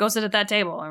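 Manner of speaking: gruff made-up voice. Acting out what Luke told her: Luke's gruff order, retold. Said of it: "very gruffly told her".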